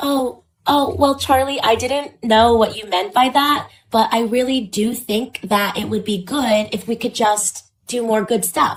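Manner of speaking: put-on high, slow, toddler-like girly baby-talk voice. Mocking how women supposedly talk: mocking women talking like toddlers. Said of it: "want women to go like this".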